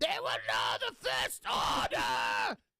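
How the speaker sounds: mock yell, harsh, rasping, rough and creaky. Imitating a speech being yelled at stormtroopers: imitating a yelling officer. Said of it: "auto muted 'cause you started yelling".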